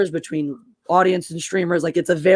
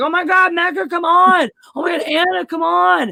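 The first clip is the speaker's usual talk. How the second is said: mock sloppy drunk voice, very high-pitched, drawn-out; 12 semitones higher, 4 dB louder than usual. Retelling calls to friends at the end of streams: imitating own drunk self. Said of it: "the fucking end of my drunk ass streams".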